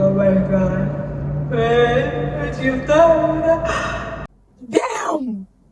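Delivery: overdone, slow, exaggerated fake sobbing. Telling how a dramatic mom would exaggerate, imitating her fake crying. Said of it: "I remember my mom fake crying".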